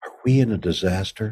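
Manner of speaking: soft, half-whispered, under the breath. Retelling what a nervous co-star said onstage on opening night: imitating a half-whisper. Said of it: "and whispers".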